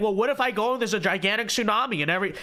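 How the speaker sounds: ordinary delivery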